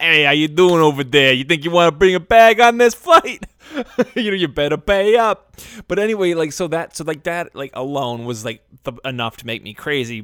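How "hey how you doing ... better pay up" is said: put-on mobster voice, louder. Joking about a bag fee as if the mob ran an airline, in a mobster voice. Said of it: "if the mob ran an airline".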